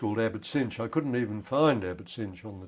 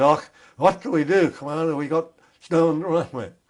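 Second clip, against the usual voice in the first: very broad, heavy Scottish brogue, raised voice; 7 semitones higher, 9 dB louder than usual. Retelling an early-morning caller who rang the Commander, in a very broad Scottish brogue. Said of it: "in a very broad Scottish brogue said".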